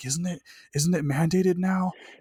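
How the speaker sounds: put-on woman's muttering voice. Retelling a lady in a grocery store: imitating muttering under her breath. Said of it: "I hear a lady under her breath".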